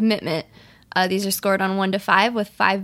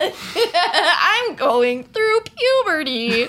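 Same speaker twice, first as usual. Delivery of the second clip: put-on high, slow, voice-cracking teen voice. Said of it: "maybe make your voice crack a little".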